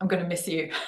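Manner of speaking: put-on whisper. Retelling a goodbye hug before a flight: imitating a whisper. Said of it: "He whispered in my ear".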